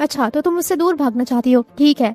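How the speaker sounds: plain reading voice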